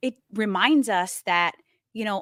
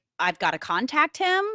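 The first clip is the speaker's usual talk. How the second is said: ordinary talk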